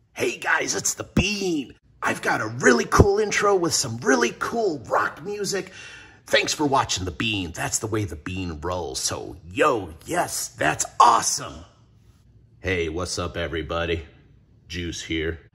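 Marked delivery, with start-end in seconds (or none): 12.6-15.4 suave, monotone character voice, quieter. Video host introduces a second character, Juice, in his suave monotone voice. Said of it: "that really cool, suave, monotone voice".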